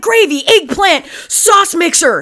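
very high-pitched burst of fury. Speaker shows how they'd blurt random words out of anger: mock-angry outburst. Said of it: "random words out of anger".

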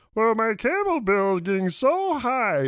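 pitched way up, loud and slow. Mimicking what everybody is saying, in a Kermit the Frog voice. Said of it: "I'm going to do your Kermit the Frog voice".

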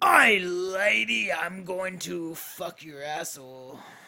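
put-on very slow, drawn out, clumsy pirate accent. Trying out a pirate line after being told to go ahead: bad pirate accent. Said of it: "I can't do a pirate accent".

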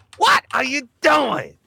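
high, creaky voice cracking up high. Describing a favorite stand-up voice that cracks: Chris Rock impression. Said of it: "how his voice cracks".

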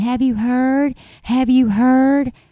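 put-on high, drawn-out screaming girl's voice. Describing a girl on her phone in a video, retelling someone screaming. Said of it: "She's screaming".

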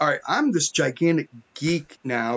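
ordinary delivery

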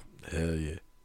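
very deep, very quiet, hushed low voice. Speaker acting out how they would react, lowered voice. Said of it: "I would lower my voice and go".

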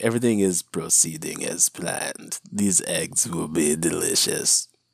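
low voice, dragged out slowly. Making breakfast, answering a loved one's question in Emperor Palpatine voice. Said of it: "it launches me into Emperor Palpatine voice".

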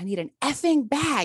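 acted high-pitched screaming. Retelling a nurse yelling for a bag during compressions: imitating a nurse screaming. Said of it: "and screamed it".

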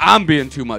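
blaring, very loud retort at full volume. Retelling what he shot back when told he's too much, retelling a loud retort. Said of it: "Loud as fuck".

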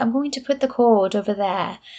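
put-on very proper, prim, polished English accent. Speaker mimicking an actor's line from a movie, in a very proper english accent. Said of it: "in a very proper English accent".

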